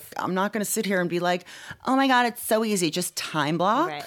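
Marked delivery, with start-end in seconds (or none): 1.8-4.0 put-on valley girl voice, higher, slower. A self-described night person pictures claiming it is easy, in a valley girl voice. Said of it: "in that valley girl voice".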